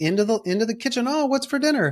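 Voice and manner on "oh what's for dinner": cheery, chirpy, happy, very high voice. Speaker retells her coming late into the kitchen for dinner, mock-chirpy happy voice. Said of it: "all happy and chirpy".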